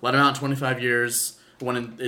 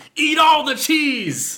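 put-on shout, much higher pitch and slower; 7 dB louder than usual. Acting out a scene from a Skyrim parody, in a mock shout. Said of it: "sorry, I got really loud".

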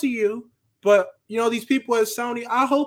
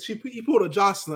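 usual speaking voice

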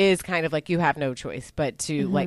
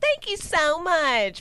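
mock sweet southern lady voice, higher pitch; 13 semitones higher than usual. Describing the mayor's wife character: imitating a nice southern lady.

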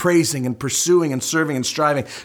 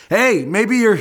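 put-on sarcastic taunting, higher and louder; 6 semitones higher, 4 dB louder than usual. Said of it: "he starts smack talking".

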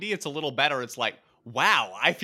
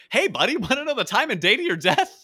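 breezy, offhand, nonchalant tone, pitched up; 8 semitones higher, 4 dB louder than usual. A speaker recalls a man's question from a show, imitating his nonchalant delivery. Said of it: "the way he says it so nonchalantly".

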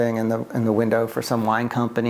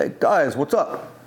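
put-on thick, heavy Greek accent; 3 semitones higher than usual. Retelling how an older Greek man greeted the speaker's group, thick Greek accent. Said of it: "he had a thick accent".

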